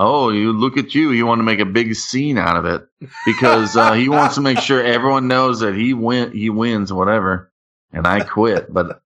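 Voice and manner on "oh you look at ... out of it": ordinary delivery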